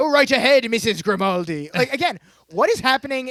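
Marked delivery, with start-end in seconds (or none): 0.0-1.7 ridiculous, exaggerated put-on British accent. Recapping a show scene, in Dan's ridiculous British accent. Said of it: "Dan to do a ridiculous British accent".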